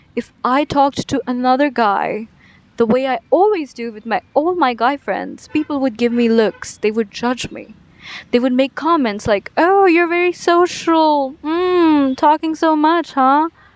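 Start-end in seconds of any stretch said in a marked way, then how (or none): 9.6-13.5 acted, sly, judging, insinuating tone, high and slow. Speaker retells people judging him for talking with guy friends, mimicking a weird tone. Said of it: "in a very weird tone".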